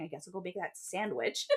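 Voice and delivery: soft, muttered mumble under the breath. Recapping a story, acting out her reply after his orders, imitating mumbling. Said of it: "she's like mumbling".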